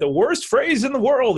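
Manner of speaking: put-on Texas accent. Quoting a podcast guest: Doctor Phil Texas accent. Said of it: "in his Texas accent".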